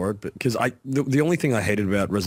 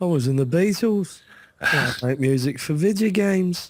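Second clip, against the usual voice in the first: high-pitched put-on English accent; 7 semitones higher than usual. Speaker imitates a former Beatle who now makes video game music, imitating his English accent. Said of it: "I don't even know what accent he's doing".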